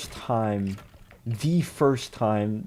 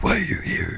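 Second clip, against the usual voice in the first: put-on comic-book villain voice; 12 semitones higher than usual. Interrogating an attacker, the speaker questions him in a Venom-like voice. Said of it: "that's the same voice".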